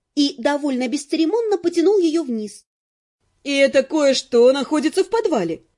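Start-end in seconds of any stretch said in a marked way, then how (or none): 3.5-5.6 snorting while speaking. Net following her husband down the stairs to the cellar, snorting. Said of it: "фыркнула Нет".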